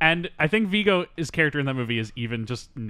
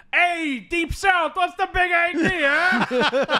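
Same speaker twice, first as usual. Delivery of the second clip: put-on loud, very high, very slow, drawn-out Bronx accent; 5 dB louder than usual. Acting out a movie scene in a racist bar: Viggo Mortensen as Tony Lip, Bronx stereotype. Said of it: "biggest, like, stereotype of Bronx".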